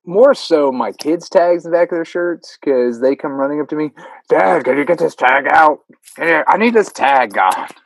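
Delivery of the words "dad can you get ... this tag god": put-on cranky, complaining grumpy old-man voice. A dad imitates his kid, who sounds like a grumpy old man. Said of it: "all my kids sound like a grumpy old man".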